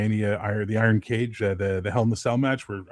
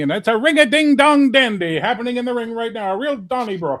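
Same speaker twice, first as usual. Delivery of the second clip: very high, loud ring announcer voice; 13 semitones higher, 7 dB louder than usual. Retelling how a wrestling announcer called matches: Gordon Soley announcer voice. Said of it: "would talk like this when he did the thing".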